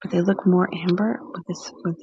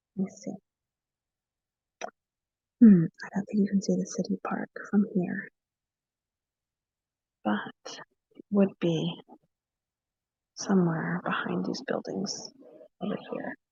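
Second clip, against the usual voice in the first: hushed whisper, much quieter; 6 dB quieter than usual. Showing someone the view while everyone's windows are open, whispering. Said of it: "I have to whisper now".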